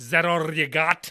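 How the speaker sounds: put-on slow, loud Scottish accent.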